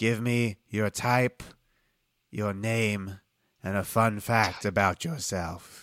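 put-on middle-aged man character voice. Game master voicing a middle-aged human addressing a new group, middle-aged man character voice. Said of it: "He's human. Yeah, he's a middle-aged man".

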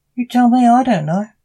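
frightened, bewildered reply. Narrator reads a captive tied to a chair answering his questioner, scared and confused. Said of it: "scared and confused".

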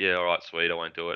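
ordinary delivery

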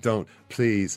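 put-on pained pleading tone. Imitating O'Neill pleading with a journalist: imitating O'Neill sounding pained. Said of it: "with this kind of pained expression of".

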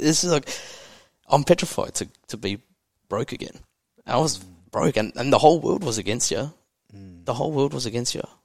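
voice choking with tears. Speaking about their own life, the speaker starts tearing up. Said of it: "I'm fucking tearing up".

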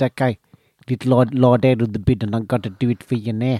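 imitated South African accent. Quoting what a man from South Africa said, in a South African accent. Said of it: "it is a totally clear South African accent".

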